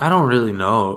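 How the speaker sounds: ordinary talk, nothing marked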